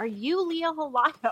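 imitated woman's high, drawn-out yelling. Retelling a lady calling across a packed restaurant: imitating a woman yelling. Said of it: "this lady from the very far end of the restaurant yelled".

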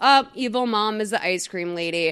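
ordinary talk, nothing marked

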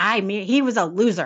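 ordinary delivery

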